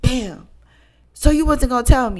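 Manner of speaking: loud, swooping, theatrical dramatic outburst. Retelling a friend slamming the table, imitating a dramatic accusation. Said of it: "dramatic, dramatic way".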